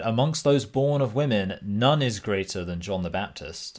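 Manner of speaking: normal talking voice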